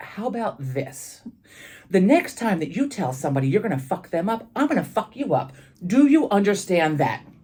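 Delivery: play-acted grave, stern, firm, no-nonsense tone. Retelling a warning to a student who threatened others: imitating own stern quiet warning. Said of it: "very sternly in his face and very quietly said".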